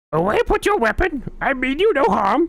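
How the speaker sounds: very high-pitched puppet-like voice. Quoting a Yoda line, doing a Yoda voice like a threatened Muppet. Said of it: "That sounds like a a Muppet being threatened".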